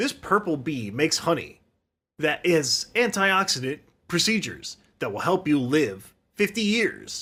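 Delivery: synthetic text-to-speech ad narrator voice. Mocking YouTube ads that sell junk, imitating a text-to-speech voice. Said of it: "text to speech people going".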